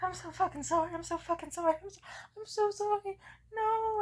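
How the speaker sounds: acted very high, gasping, tearful, hyperventilating sobbing. Retelling an embarrassing moment, imitating own crying and hyperventilating. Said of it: "I started crying and hyperventilating".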